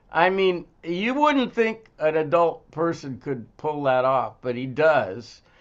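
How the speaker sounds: ordinary talk, nothing marked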